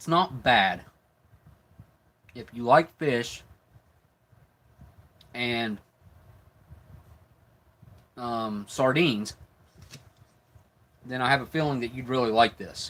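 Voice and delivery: speaking with food in mouth. Tasting something fishy, the speaker describes it while chewing. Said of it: "because I'm chewing it up".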